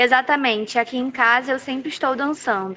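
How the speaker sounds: plain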